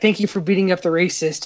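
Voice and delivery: ordinary talk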